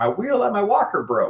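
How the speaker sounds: put-on very high-pitched, loud, elderly grandma voice. Describing a customer at a medical equipment company, in an old grandma voice. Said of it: "seventy-year-old grandma's voice".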